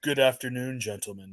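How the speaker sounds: very deep, smooth and silky voice. Correcting another impression of Mister Isaacs: really deep and silky Mister Isaacs voice. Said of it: "Really deep and silky".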